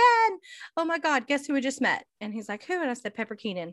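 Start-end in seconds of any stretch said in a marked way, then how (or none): 0.0-2.0 mock, high-pitched yelling, calling out. Recalling yelling to the bartender while walking down the street; retelling own yell. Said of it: "I'm yelling at him".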